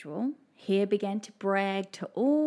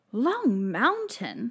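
startled, incredulous exclaiming; 3 semitones higher, 4 dB louder than usual. Mouse reacts to Tortoise proposing a race to Long Mountain, exclaiming. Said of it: "exclaimed Mouse".

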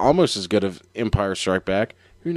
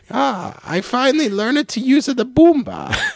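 put-on goofy alien voice, higher pitch; 12 semitones higher than usual. Joking about a masked villain revealed as Jar Jar Binks: Jar Jar Binks voice. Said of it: "Jar Jar uses the Boomba".

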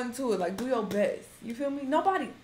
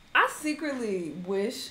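ordinary talk, nothing marked

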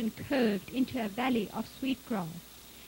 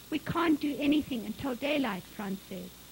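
ordinary delivery

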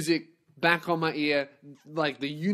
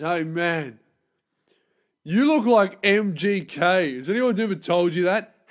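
play-acted drunk, loud, slow drawl through mouthful; 2 semitones higher, 6 dB louder than usual. Speaker imitates a man in Macca's talking to him while eating, mouth full. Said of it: "He's eating food".

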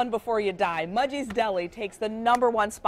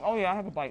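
speaking mid-chew, talking through a full mouth; 3 semitones lower, 5 dB quieter than usual. Trying a sandwich with others and taking a bite, talking with mouth full. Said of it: "while she's got her mouth full here".

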